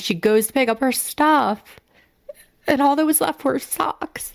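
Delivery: high, tearful voice, crying through words. Speaker recounts a story that makes her physically ill, choking up, near tears. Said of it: "let me get it together".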